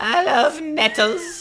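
creepy, frightening voice. Joking about whispering in another speaker's ear: terrifying Salad Fingers voice. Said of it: "that terrifying salad fingers voice".

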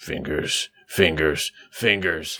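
muttering. In a role-play, Smash calls Fingers three times: Smash saying it under his breath. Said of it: "will say under his breath three times".

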